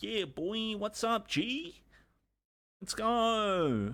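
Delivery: tiny, very high, very slow voice, "go" drawn out. Act out Troy replying to your welcome while he plays his driving game, imitating Troy's little voice. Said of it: "he's got this little voice kind of like this".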